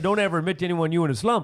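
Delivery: ordinary delivery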